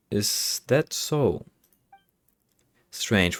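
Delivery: very slow, stretched-out, drawn-out words. Reacting to an explanation about the trains, speaking very slowly. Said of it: "Why is Paimon speaking so slowly".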